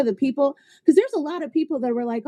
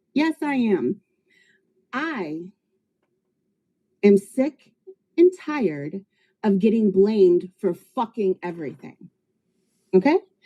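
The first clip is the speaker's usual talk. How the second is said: mildly annoyed, fed-up, a little irritated tone; 4 semitones lower than usual. Telling the viewers she is sick of being blamed: a little irritated. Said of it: "'cause I'm a little irritated".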